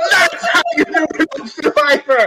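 high, screamed game-show host yell. Retelling a triumphant moment being ruined, imitating Jeff Probst screaming. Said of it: "by Jeff screaming".

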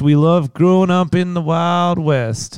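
put-on American accent. Joking that the band pretended to be American: fake American accent. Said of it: "pretending to be American".

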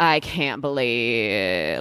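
trailing-off vocal fry. Showing how a vocal fry trails off: trailing-off vocal fry. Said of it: "that trail off".

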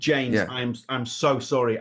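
panicky apologetic tone. Retelling a promoter's request at a gig: imitating a panicking promoter. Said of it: "he's panicking 'cause he's going".

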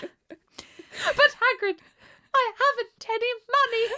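put-on very high, old-fashioned, posh child voice. Quoting a line from the first films: imitating a victorian child. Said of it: "speak like Victorian children".

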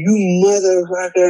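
play-acted, enraged, furious screamed curse. Retelling how an angry driver screamed before getting out of his car, retelling a scream. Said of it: "he's screaming".

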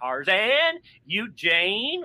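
put-on high, swooping California accent, dude-like. Speaker describes a favorite Tarzan film star who talks like a California dude; Lex Barker Tarzan impression. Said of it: "he sort of has like a California accent".

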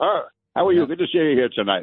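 put-on Irish accent laid on. Recalling a father greeting people at his son's send-off, Irish brogue. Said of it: "he had an Irish brogue".

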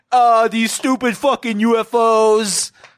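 very slow, loud, stretched delivery with drawn-out Os. Imitating a president tweeting about UFOs: Trump impression. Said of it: "That's my Trump impression".

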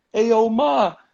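high mock catcall-style yell. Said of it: "like, yelling out of cars".

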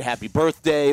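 ordinary talk, nothing marked

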